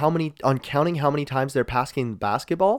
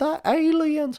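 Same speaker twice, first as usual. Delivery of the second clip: very high, put-on Southern accent; 14 semitones higher than usual. Mimicking people reacting to new UFO reports, in a Southern accent. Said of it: "it just goes right to Southern accent".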